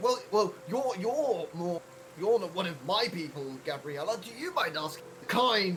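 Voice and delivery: strained politeness forced through clenched, gritted teeth. A player in character asks another character to do the asking; smiling through gritted teeth. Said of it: "I'm smiling like through my teeth".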